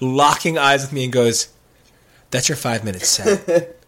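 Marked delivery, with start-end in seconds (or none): 2.3-3.6 acted, bone-dry deadpan understatement, no reaction. Retelling an entertainment guy's reply to the speaker's story, imitating a deadpan reply. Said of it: "his response was literally deadpan".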